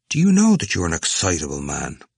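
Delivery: ordinary delivery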